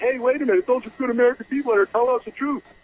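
high, fast complaining tone. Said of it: "complaining that".

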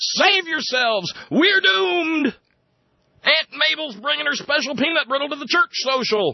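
very high-pitched, shrill screaming shriek. Retelling how a man ran from the room, retold screaming. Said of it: "he goes running from the room screaming".

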